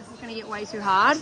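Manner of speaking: ordinary talk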